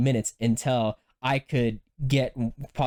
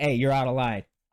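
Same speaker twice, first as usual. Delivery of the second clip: normal talking voice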